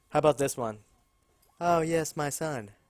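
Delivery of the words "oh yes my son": put-on high feminine voice, spoken very slowly. Trying another version of how she sounds: imitating a woman's voice. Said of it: "Not quite feminine enough".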